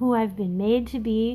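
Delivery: plain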